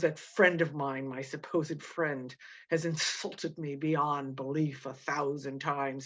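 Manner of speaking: put-on gloating, smug, self-satisfied tone. Paraphrasing the narrator's complaint about his supposed friend: put-on smug Montresor voice. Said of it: "so he's got this smug tone".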